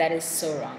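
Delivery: plain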